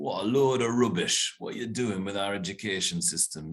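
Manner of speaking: put-on broad northern English accent, laid on thick. Recalling tough middle-aged chemists' reaction, mimicking them in a strong northern accent. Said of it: "going in a strong northern accent".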